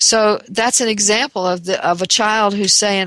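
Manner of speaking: normal talking voice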